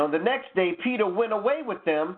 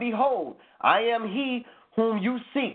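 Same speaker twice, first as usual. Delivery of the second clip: plain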